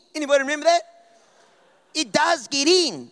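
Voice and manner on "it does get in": slow, bad, horrible, put-on Australian accent. Retelling a toothpaste advert with chalk: imitating a horrible Australian accent. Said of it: "that horrible Australian accents".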